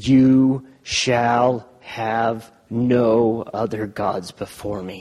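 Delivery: very slow, deliberate, drawn out, every word weighed. Picturing how Greg would say it, very slowly, like Greg. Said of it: "I can picture Greg saying it very slowly".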